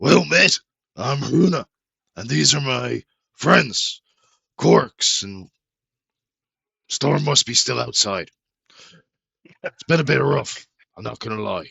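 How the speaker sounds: very loud, booming, rough, raspy voice. A game narrator voices a newcomer greeting the players, in Runa's raspy voice. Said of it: "with a raspy voice".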